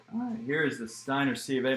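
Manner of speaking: voice breaking and cracking with excitement. Revealing a certificate after pulling an autographed helmet, voice cracking. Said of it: "My voice is cracking".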